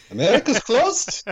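very high-pitched, put-on Eastern European accent. Quoting The Terminal, doing Tom Hanks: Tom Hanks Viktor Navorski accent. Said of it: "you were doing Tucci and Hanks back to back".

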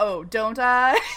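put-on sassy voice. Retelling a character's comeback to armed men: imitating a sassy retort. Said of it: "he's like a sassy John Mulaney bit".

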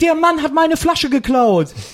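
put-on very high-pitched, startled, alarmed old woman voice. Retelling a story, voicing an old woman beside the winner: mock-startled old woman. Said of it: "guckt ihn an so erschrocken sagt dann".

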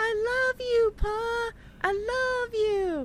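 put-on yelling. Recapping the episode as Pa walks off: imitating Carrie yelling. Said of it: "Carrie's yelling after Pa".

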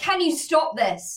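mock touchy, irrational lashing out, high and slow. Recounting snapping at two people laughing at the speaker; retelling lashing out. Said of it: "I lash out irrationally".

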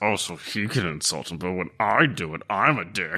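sulky, low, grumbling mutter under the breath. Playing a character in a tabletop game, speaking aside: muttering under his breath. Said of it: "sort of muttering under his breath".

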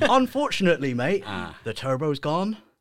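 put-on slight West Country accent in the vowels. Act out the VW Audi specialist telling you about the turbo, with a bit of a West Country accent. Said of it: "he sounds like he's a bit West Country".

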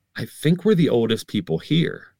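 ordinary talk

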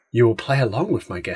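hushed voice. Podcast host retells an old bit aimed at Gareth, in a quiet voice. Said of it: "And then I put on my quiet voice again".

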